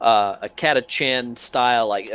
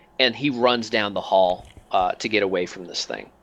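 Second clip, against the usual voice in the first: ordinary delivery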